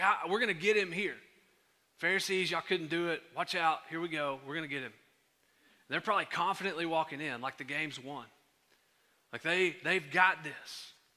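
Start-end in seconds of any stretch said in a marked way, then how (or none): none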